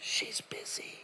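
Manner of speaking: very hushed, soft little whisper. Retelling a child answering the phone: imitating a whisper. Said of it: "the kid's whispering all the way through".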